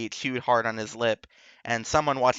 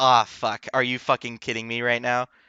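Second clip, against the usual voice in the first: put-on angry voice. Retelling a scene from the book, imitating Harry's anger. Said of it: "Harry's angry reasoning".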